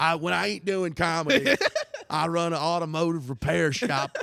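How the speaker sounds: bad comedian voice. Joking about a terrible impression: terrible Dave Chappelle impression. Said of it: "it's a terrible impression".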